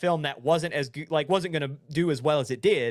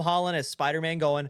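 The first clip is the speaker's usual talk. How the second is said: ordinary talk, nothing marked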